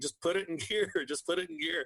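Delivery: urgent, pressing delivery, repeated twice. Retelling a fishing story, the speaker recalls yelling down at a man; retelling own yell. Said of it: "I was yelling down at Pete".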